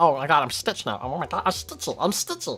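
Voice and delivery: stuffy blocked-nose voice. Showing how closing off the nose changes the voice: closed-off nose voice. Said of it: "You can close off entirely your nose".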